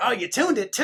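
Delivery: loud, high, wild and unhinged crazy tone. Retelling how he reacted to getting his restrung guitar back, imitating his infamous crazy tone. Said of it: "in his infamous crazy tone".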